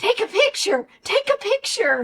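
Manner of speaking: high, urgent yell, said twice over. Retelling what he yelled during a kitchen fire: imitating someone yelling. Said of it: "he's yelling".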